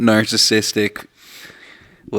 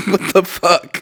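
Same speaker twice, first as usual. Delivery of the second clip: high, mock outraged disbelief. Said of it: "bit like".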